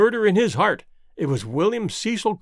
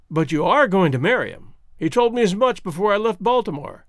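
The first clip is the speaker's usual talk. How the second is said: ordinary delivery, nothing marked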